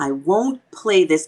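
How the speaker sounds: ordinary delivery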